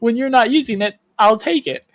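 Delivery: put-on innocent, guileless, naive voice. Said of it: "I also put on a very, like, naive voice".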